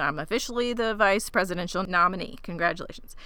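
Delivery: ordinary talk, nothing marked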